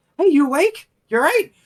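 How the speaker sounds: anxious, very concerned, very high, very loud. Leaning over an unconscious companion to wake them: very concerned. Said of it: "very concerned".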